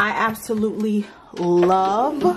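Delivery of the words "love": heavy stress on the word love. Talking about recording gear, stressing the word love. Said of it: "emphasis on love".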